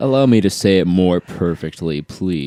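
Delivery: mocking smug tone. Imitating online commenters who repeat the hosts' points: imitating a smug commenter. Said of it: "they'll say it in this smug fucking way".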